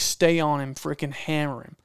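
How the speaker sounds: normal talking voice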